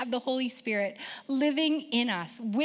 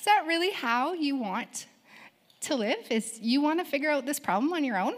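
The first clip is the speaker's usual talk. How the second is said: put-on gently sarcastic tone; 2 semitones higher than usual. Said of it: "It's kind of sarcastic, but very gentle".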